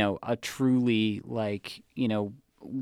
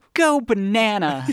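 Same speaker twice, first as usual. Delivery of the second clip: very high, very loud, eager excited cry; 10 semitones higher, 7 dB louder than usual. Retelling a cartoon scene with a banana race: imitating excited Ralph Wiggum. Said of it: "it's quintessential Ralph, so he's like".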